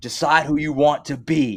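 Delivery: demanding coach shout, high-pitched and toned down. Retelling how a man screamed at men he felt weren't hitting hard enough, retelling a scream. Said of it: "he was screaming at them".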